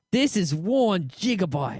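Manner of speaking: slow, put-on Australian accent. Retelling what a man from england said, in an australian accent. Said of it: "that was an Australian accent, sorry".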